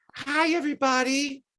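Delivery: very high-pitched, sweet voice. Retelling a wrestler greeting a room: imitating Awesome Kong's sweet voice. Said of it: "she was like".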